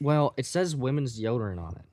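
ordinary delivery

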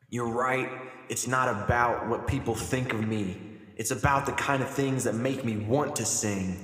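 ordinary talk

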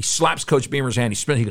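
ordinary delivery

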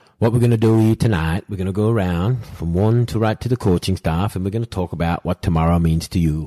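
bad, clumsy English accent. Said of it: "I've got a shit pommy accent anyway".

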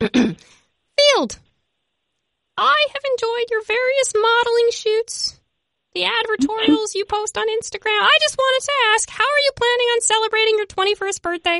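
goofy, very high-pitched silly talking dog voice. Reading the last listener question as if from his dog, Lenny the dog's voice. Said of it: "read it in his voice".

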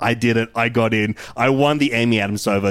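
ordinary delivery

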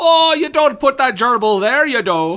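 bad put-on Irish accent, loud and high. Joining in mocking an actor's Irish accent from a remake: bad put-on Irish accent. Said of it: "an Irish accent".

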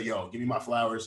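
plain

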